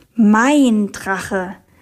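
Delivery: proud, pride-filled voice. Reading a girl's reply to her friend, proud. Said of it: "sagte Mariella stolz".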